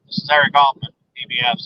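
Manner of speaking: ordinary talk, nothing marked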